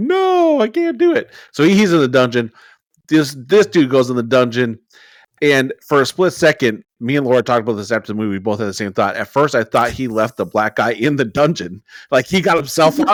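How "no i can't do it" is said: strange wailing scream, very high, slow and drawn-out. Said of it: "does this weird screaming like".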